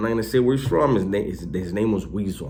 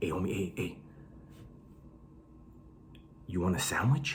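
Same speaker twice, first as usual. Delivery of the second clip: very quiet, secretive, furtive whisper; 2 semitones lower, 15 dB quieter than usual. Retelling how a guy came up to ask about a sandwich: imitating Weasel whispering. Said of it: "why did you whisper right now".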